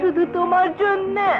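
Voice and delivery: normal talking voice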